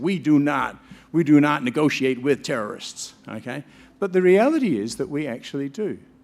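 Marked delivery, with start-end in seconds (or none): 0.0-3.1 put-on US accent. Quoting the president from american movies: american accent. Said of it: "says in an American accent".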